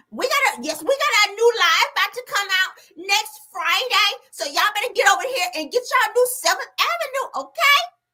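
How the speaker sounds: very high-pitched voice. Retelling how Mel pitches Seventh Avenue: imitating Mel. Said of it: "Don't Mel say that?".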